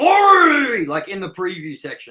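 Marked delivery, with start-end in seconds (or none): 0.0-0.8 very high, very loud, shrill yell. Retelling how the other speaker yelled a name in the preview: imitating someone yelling. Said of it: "where you yelled out".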